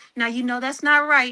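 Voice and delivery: put-on gentle, reasoning parent tone. Retelling how she talks to her kids when trying to gentle parent: imitating her gentle-parenting voice. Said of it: "'Cause when I be trying to say".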